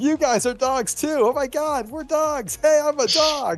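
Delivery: put-on dog shout. Describing the dog barking at other dogs all night, imitating a dog shouting. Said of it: "he's just shouting".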